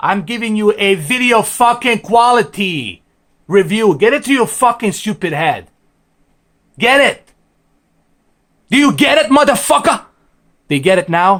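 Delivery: heated, angry cursing rant with pitch climbing. Telling viewers to unsubscribe if they dislike the review: angry ranting tone. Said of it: "let me get back to my regular tone of fucking voice".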